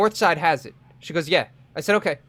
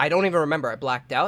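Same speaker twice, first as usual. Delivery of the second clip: ordinary talk, nothing marked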